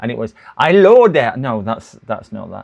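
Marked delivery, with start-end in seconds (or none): 0.6-1.4 put-on vampire count voice. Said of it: "he sounded like the Count on Sesame Street".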